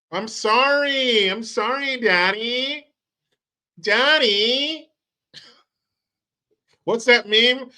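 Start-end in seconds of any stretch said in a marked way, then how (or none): 0.1-4.8 high, very slow groveling begging, one word stretched. Mocking canada backing down after mexico: mock begging as canada. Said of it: "here comes Canada".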